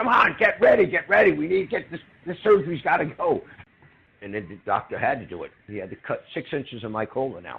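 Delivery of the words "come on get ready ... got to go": very high, shrill, loud, frantic screaming, acted out. Retelling a doctor urging his team to get ready: imitating a doctor screaming. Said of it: "He started screaming".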